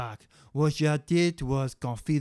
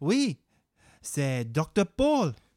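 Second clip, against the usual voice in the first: put-on broken, mangled French accent. Sous chef character introducing Dr. Paul to the host: broken French accent. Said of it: "a cannibalistic chef with a broken French accent".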